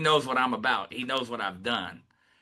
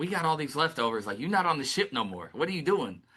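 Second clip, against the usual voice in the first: put-on irritated, mad, scolding, complaining tone; 3 semitones higher than usual. Retelling a wife's complaint about leftovers: imitating an angry wife. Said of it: "my wife be getting so mad at me".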